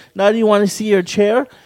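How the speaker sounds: ordinary delivery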